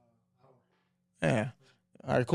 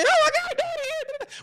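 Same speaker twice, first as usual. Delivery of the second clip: put-on very high, excited kid voice. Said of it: "but daddy walk in".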